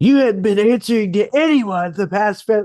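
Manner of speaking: high-pitched, loud, angry yelling. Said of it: "he started, like, yelling at me".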